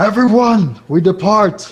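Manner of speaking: bombastic, grandiose, booming, very high yell. Walking away in character, calling out to everyone: bombastic yell. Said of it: "I would use my bombastic voice to yell out".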